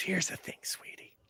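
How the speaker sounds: fast, breathy, raspy voice. Describing a woman character, the speaker does her raspy coffee-tobacco voice. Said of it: "raspy coffee tobacco voice".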